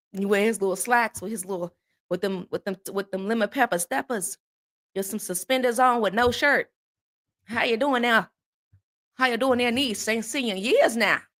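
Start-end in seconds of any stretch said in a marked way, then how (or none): 7.5-11.2 mock Southern US accent. Speaker imitates an uncle from down South greeting his niece: imitating a Southern uncle. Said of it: "I got an uncle that talk like that from down there".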